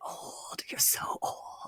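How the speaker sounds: slow, drawn-out, hushed whisper. Quoting the remark he just said, whispering it: whispered. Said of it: "it just like whispered it".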